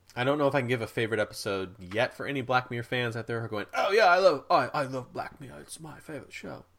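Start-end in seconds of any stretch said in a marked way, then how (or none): 3.8-6.7 silly put-on British accent, pitched up. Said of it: "Is that stupid British accent".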